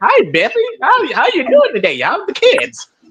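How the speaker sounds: mock very high, cheesy, sing-song, grinning giggle. Mocking the head coach up there: imitating someone cheesing and giggling. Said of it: "cheesing and, and giggling and".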